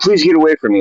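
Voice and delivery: play-acted, high, frightened, terrified voice. Retelling a stranger's reply after being addressed: imitating a terrified plea. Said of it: "she was terrified".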